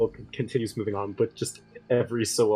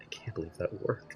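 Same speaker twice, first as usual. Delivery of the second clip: very quiet whispered mutter under the breath; 5 semitones lower, 12 dB quieter than usual. A player voices Kaleo after their trick works: muttering under his breath. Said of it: "Kaleo mutters under his breath".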